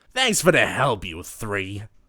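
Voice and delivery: rough, harsh, grizzled delivery. Reading a story, a character thanks three people: harsh, grizzled voice. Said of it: "says the harsh, grizzled voice".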